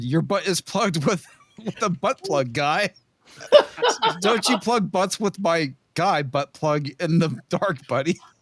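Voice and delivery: words breaking up through helpless laughter. Reading out a text exchange with a guy, laughing while reading. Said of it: "I'm having reading because I'm laughing so hard".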